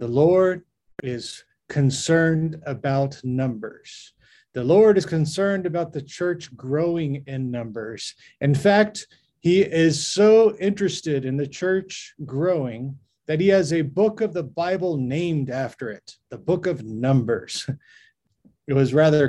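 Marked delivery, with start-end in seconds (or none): 0.0-17.7 grand, polished, eloquent preacher-style oratory, rolling delivery. Recalling Bishop Hassan Kalibwa's sermon on church growth, in his most eloquent preaching voice. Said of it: "in his most eloquent voice".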